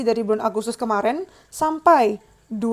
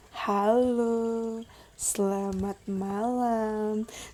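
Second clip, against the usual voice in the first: slow, stretched-out, unhurried drawn-out words; 8 dB quieter than usual. Showing the slow style the speaker says they can't do: slow, drawn-out speech. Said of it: "aku nggak bisa lambat-lambat sih yang kayak".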